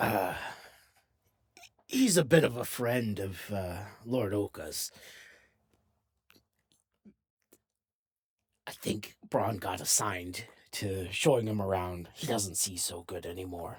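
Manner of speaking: deliberately obvious, hushed stage whisper. Voicing a character who leans down to share gossip: obvious stage whisper. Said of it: "very obviously stage whispers".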